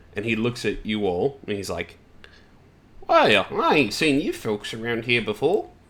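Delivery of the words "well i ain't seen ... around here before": swooping bird-like creature voice. Game master voices a bird-like figure greeting the players, bird-like creature voice. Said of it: "a bird-like individual".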